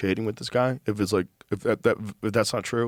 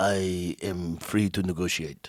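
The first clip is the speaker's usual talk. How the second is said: fake Iranian accent at a lower pitch; 4 semitones lower, 4 dB quieter than usual. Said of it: "he's talking with an Iranian accent".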